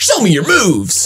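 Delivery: over-the-top, very high, full-on hyped delivery. Retelling a video game character's line to friends, full-on Captain Falcon voice. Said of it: "he's like American homeboy, so he does this full on like".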